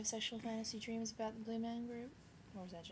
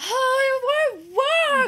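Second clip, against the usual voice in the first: very high, very loud, very slow, drawn-out wail; 22 dB louder than usual. Retelling a morning when the hair would not work: imitating own past flipping out. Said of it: "You should have seen her flipping out".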